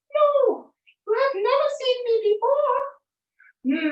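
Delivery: very high-pitched put-on voice, drawn out. Reading a story, Jack answers Missus Ogre at the door in a very high-pitched voice. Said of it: "Jack said with a very high-pitched voice".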